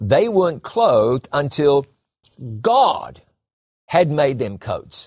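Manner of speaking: emphasis shifted onto God.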